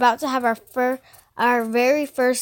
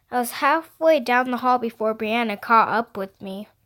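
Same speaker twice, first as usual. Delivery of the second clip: ordinary delivery, nothing marked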